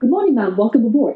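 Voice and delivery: eager, cheery, enthusiastic, upbeat voice. Showing the difference between tones of voice: enthusiastic. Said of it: "If I would want to be enthusiastic, I will say".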